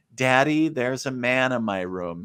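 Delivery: put-on small voice of a five-year-old girl. Retelling a five-year-old daughter coming in at two in the morning: imitating a little girl. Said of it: "a five-year-old little girl come in your room at two o'clock in the morning going".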